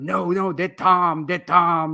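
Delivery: put-on heavy Brazilian accent. Retelling an instructor correcting a student's thumb position: imitating a heavy Brazilian accent.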